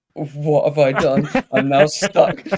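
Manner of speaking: mock panicked dismay. Retelling the moment right after blurting out a lie, mock panicked dismay. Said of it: "as soon as I said it, I was like".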